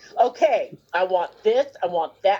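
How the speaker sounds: acted firm, insistent voice. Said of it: "very firm and very adamant".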